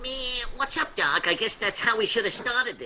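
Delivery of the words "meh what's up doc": cartoon rabbit voice. Opening with a cartoon catchphrase: Bugs Bunny voice. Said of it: "I guess that sounds like him".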